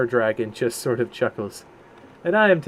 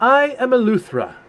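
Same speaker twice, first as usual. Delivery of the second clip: very high, shrill yelling dragon voice; 10 semitones higher than usual. At the Council of Dragons, the male brass dragon introduces itself: Eleuthera's yelling dragon voice. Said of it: "The male brass dragon will yell".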